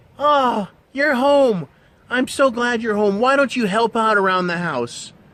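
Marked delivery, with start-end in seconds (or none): 0.2-4.2 overjoyed, high-pitched, bursting with delight. Retelling a wife's greeting on coming home: imitating wife's Christmas-morning excitement. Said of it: "She'd come over like it was Christmas morning".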